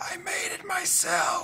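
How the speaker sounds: loud stage whisper. Voicing a character who leans in to another character: loud whisper. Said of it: "he leans in and he whispers loud enough".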